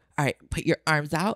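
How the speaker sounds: quiet, fierce delivery. Giving listeners a sample of a promised Patreon JOI: fiercest JOI voice. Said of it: "I'll be like".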